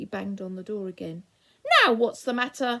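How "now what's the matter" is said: loud, angry, shouted yell in a temper. A voice behind a bolted door answers Moonface's banging with an angry yell. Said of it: "yelled the voice angrily".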